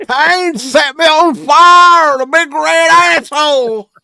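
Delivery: very loud, very high, excited ringside announcer voice. Take your turn in a contest for the best impression, doing a JR impression. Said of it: "Who here has the best JR impression".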